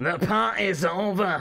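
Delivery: high Scottish wrestler growl. Doing an impression of Drew McIntyre: Drew McIntyre impression. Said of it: "That's my impression of Drew McIntyre".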